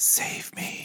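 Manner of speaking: soft, breathy whisper, very close to the ear. Retelling a character's line to the doctor: imitating a whisper. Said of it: "whispering in the doctor's ears".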